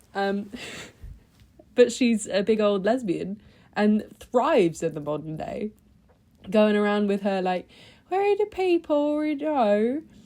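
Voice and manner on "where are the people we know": put-on very high-pitched rustic country farmer accent. Impression of how a woman would talk, put-on rustic farmer accent. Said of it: "she talks like this, uh, like uh, farmer ... that's my impression of what she would sound like".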